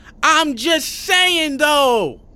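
shrill, very loud, high-pitched yell. [name] to Mike Livingston, who turned the radio way up; yelling over the radio. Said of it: "[name] yells over the radio".

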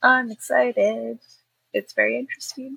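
flat, sagging, deflating trail-off, running out of air. Signing off until next week, the speaker trails off, deflating at the end. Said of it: "You sound like a balloon that just kind of lost all her air".

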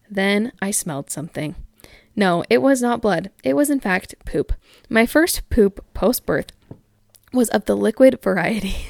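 ordinary talk

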